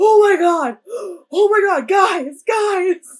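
very slow, high, loud, drawn-out scream. Retelling a ghost-hunting moment: imitating Aaron screaming. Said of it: "you just hear Aaron screaming".

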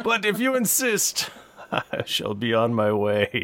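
put-on elderly gentleman character voice. An older gentleman, told to take the day off, replies in an older gentleman voice. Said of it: "an older gentleman in a tuxedo comes in".

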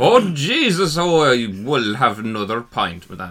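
very loud, fake, put-on bad Irish accent. Showing what people do when putting on an irish voice, in a bad irish accent. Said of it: "A bad Irish accent".

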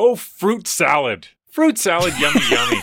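put-on slow sing-song kid talk. Retelling how a parent switches words when kids overhear: imitating self talking clean for kids. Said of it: "the door opens a little crack and the kids can hear you".

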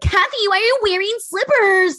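very high, whiny voice. Retelling what Kyle said when Kathy showed up, in a mock-whiny Kyle voice. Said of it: "But Kyle's is whiny".

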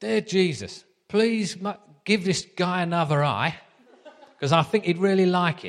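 put-on high-pitched Essex accent, laughing while speaking. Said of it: "So I'll do the accent again".

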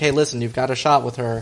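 ordinary talk, nothing marked

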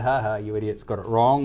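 ordinary talk, nothing marked

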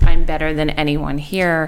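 ordinary talk

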